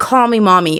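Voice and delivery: ordinary talk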